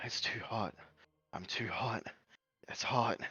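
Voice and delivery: low, hushed, under-the-breath, looping repetitive mumble. Describing a character in a role-play scene, muttering under her breath. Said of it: "muttering that under her breath".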